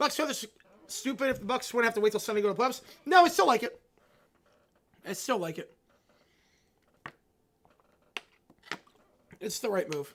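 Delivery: strained, struggling voice. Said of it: "I can barely speak".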